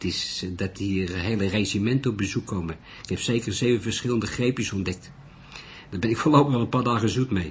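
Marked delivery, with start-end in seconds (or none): none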